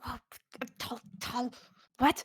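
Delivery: slow, eager, excited, hushed whispered chatter. Voicing small creatures reacting to a tall stranger: whispering excitedly. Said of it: "start whispering among themselves".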